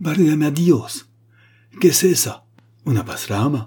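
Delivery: great high, drawn-out terrified cry in Spanish. The Spanish grandee cries out in Spanish at the table, a cry of terror. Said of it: "poussa un grand cri d'effroi".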